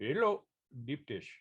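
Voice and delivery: put-on Indian accent. Joking about a dot on the head from sixty-nine: mock Indian accent. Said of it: "you're mocking Middle Eastern accents?".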